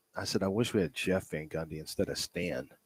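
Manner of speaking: low, indistinct, swallowed mumble under the breath. Repeating yourself to a listener who can barely hear you, mumbling. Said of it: "You're mumbling".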